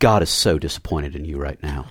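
very low, quiet, bone-dry deadpan. The speaker quotes a girl from the missions team, imitating her completely deadpan delivery. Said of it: "just completely deadpan".

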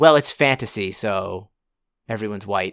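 ordinary delivery

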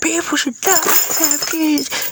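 shrill, very high, dragged-out screaming rant. Recounting an outburst while banging on the table, retelling a scream. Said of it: "I was like screaming".

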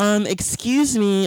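high, talking-down, condescending polite tone. Retelling what a woman behind in line said: imitating a condescending tone. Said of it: "being condescending".

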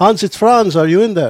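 put-on very loud, high, bellowed, horrible German accent. Calling to a man behind a door, posing as his friend Franz: bad German accent. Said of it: "Pardon my horrible German accent".

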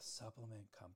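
soft, hushed, secretive whisper. Retelling a line they'd say to people, leaning in and whispering. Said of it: "I'd lean in and I'd whisper".

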